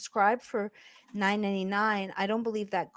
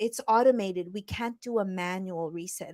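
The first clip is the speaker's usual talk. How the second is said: ordinary talk, nothing marked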